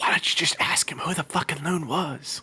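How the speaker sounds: hushed, discreet whisper under the breath. Character trying to be discreet, urging another to question someone, whispering. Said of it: "Why are we whispering?".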